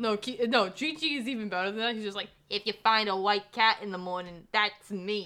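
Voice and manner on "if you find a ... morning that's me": put-on talking-cat voice, louder. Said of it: "That's like his voice".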